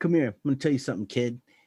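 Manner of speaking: put-on New York guy accent. Retelling a guy doing stand-up who called him over: imitating a New York accent. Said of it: "total New York guy".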